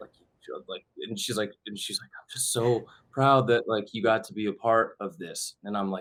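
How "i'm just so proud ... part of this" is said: put-on tearful, weeping voice, crying while talking. As the opening credits start, the speaker quotes their weeping mom; imitating mom weeping. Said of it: "she starts weeping".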